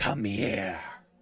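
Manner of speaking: put-on ancient, old dragon character voice. Voicing a green dragon calling to a character: green dragon voice. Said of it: "green dragon look at you, and its mouth open wide and say".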